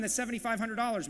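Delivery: ordinary delivery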